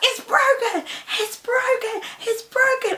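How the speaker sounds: play-acted urgent, very high, repeated shouting. Retelling falling to the ground after an injury: imitating own yelling. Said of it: "I'm yelling, I'm yelling".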